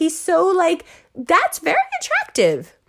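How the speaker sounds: voice breaking and cracking high mid-line. Speaker talking about an actor, voice cracking. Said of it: "You see how my voice cracked?".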